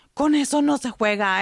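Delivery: put-on angry scolding. Retelling how she scolded the speaker over which Jesus, mock angry. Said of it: "she'd look at me so mad".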